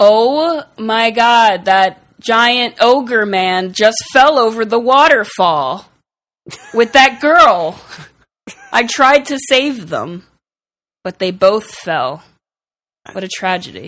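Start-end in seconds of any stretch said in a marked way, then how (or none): 0.0-10.2 put-on, loud, high, fake-alarm shouted yell. Yelling to pirates in a game scene, yelling in character. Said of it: "start yelling".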